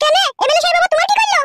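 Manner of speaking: high-pitched woman's voice.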